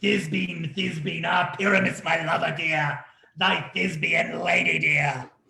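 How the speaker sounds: put-on, squeezed, small, monstrous voice. An actor offers to play Thisbe too, speaking as Thisbe in a monstrous little voice. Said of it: "I'll speak in a monstrous little voice".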